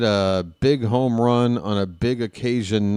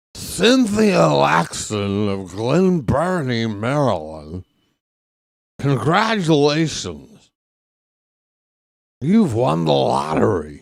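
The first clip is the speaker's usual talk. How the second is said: put-on old baseball announcer voice, pitched higher; 3 semitones higher than usual. Repeating the lottery winner announcement during the game call: Harry Caray voice. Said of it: "Did I do that in my Harry Carey voice?".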